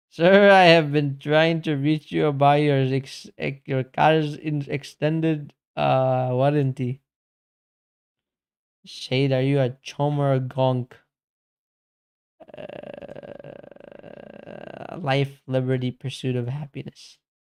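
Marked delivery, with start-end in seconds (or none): 0.2-7.0 put-on loud Indian-accented English. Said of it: "You put it in an Indian accent".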